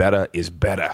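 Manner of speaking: put-on low Boston-accented coach voice. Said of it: "in his Massachusetts Boston accent".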